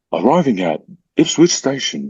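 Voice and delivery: high, announcer-style train PA voice. Speaker describing a recorded train voiceover, doing a Queensland train announcer impression. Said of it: "That's probably not a good impression".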